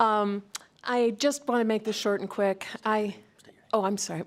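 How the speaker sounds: nervous, anxious, uneasy voice. Giving public comment to the Chair and Assembly, nervous. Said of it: "Sorry, I'm nervous".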